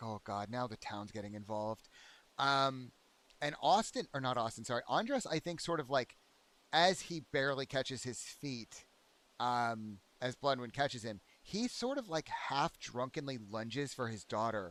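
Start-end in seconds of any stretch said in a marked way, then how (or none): 0.0-1.9 exasperated sigh, lower and quieter. Voicing a character who sighs as the town gets involved: weary sighing. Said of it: "Bloodwind sighs visibly, like, she's like, and she blanches".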